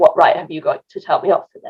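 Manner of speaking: normal talking voice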